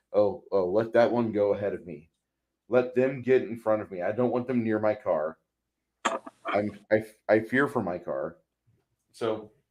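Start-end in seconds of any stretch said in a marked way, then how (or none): none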